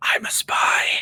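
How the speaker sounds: soft, secretive little whisper. Joking about a spy at a bar telling players a secret: imitating a whisper. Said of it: "whispering to you players".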